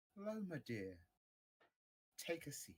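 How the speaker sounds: angry, let-down, disappointed sing-song voice. Voicing the mother greeting loma with a disappointed, angry mum smile: disappointed angry mum voice. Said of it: "a disappointed, angry mum smile".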